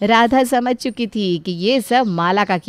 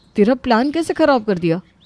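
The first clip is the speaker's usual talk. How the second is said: plain reading voice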